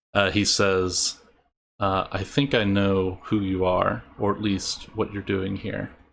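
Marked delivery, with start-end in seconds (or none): 2.1-5.9 voice dropped to a low, quiet undertone. Narrating a scene after the guards leave, a man speaks in a lower voice. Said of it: "in a lower voice".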